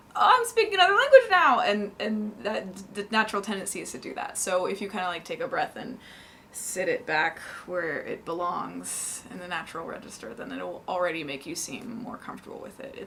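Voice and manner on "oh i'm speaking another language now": tense voice jumped very high, very loud. Showing how a tense speaker's voice goes way up in another language. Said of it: "your voice goes way up".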